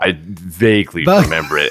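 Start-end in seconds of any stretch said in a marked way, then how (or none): 0.2-1.0 stressing the word vaguely. Asked if they remember a movie scene, stressing the word vaguely. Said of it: "I'm going to emphasize the word vaguely".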